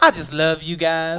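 put-on southern accent, slow and drawn out. Retelling what a bar regular used to say: imitating a southern accent. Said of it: "he had this southern accent".

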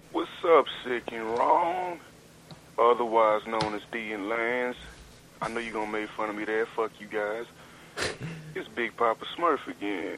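drawn-out, drawling Southern US accent. A caller leaving a message for the show hosts, southern drawl. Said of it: "like that southern drawl".

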